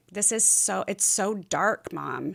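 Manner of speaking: slow, tearful crying voice. Retelling a son's phone call about a dark mood: imitating son crying. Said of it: "calling, crying".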